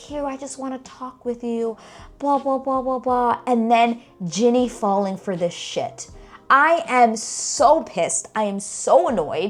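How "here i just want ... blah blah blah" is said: sweet, pitched-up, overly friendly nice-guy voice. Retelling how James talks to her: imitating James being all nice. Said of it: "all nice to her and being like".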